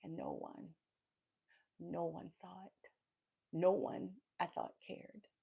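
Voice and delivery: slow delivery with emotion welling up. Recalling a hard time of being completely alone, getting emotional. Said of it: "I'm getting emotional just talking about it now".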